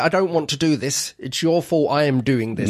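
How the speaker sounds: ordinary delivery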